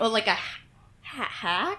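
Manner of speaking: hesitant, unsure. Player in a tabletop game suggesting another roll option, hesitant. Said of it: "I say hesitantly".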